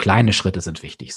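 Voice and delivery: stress on kleine Schritte.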